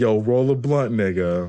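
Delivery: ordinary talk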